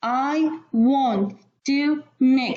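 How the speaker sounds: very slow, choppy, stopping after every single word. Showing how not to read aloud: a pause after each word. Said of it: "like put many stops after each word".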